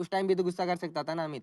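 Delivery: ordinary talk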